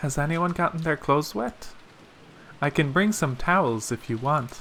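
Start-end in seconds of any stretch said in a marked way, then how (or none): none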